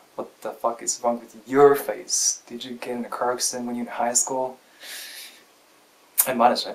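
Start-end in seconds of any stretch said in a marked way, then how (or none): none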